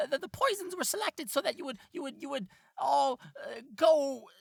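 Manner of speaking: very high, squeaky little rat voice.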